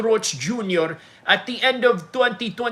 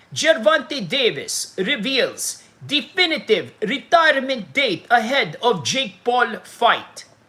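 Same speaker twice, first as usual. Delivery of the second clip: slow put-on Russian news anchor accent. Reading a Sports Illustrated article aloud to viewers: mock Russian newsman accent. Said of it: "I'm gonna read an article and I'm gonna do uh, Russian newsman".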